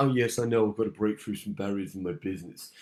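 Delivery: put-on tired, low, soft old-timer voice with no energy. Coaching an audience to raise hands, showing how not to: imitating an old person. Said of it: "don't do it like an old person".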